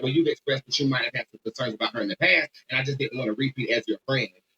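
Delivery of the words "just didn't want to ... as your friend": ordinary talk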